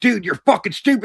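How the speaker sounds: put-on angry cussing. Retelling how a seller started cussing at him: imitating someone cussing angrily. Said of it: "he started freaking, like, cussing at me".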